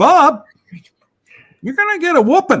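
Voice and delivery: high, fast, whining, scolding tone. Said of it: "you sound like my owner whining".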